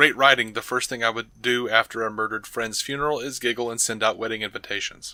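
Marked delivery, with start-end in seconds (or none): none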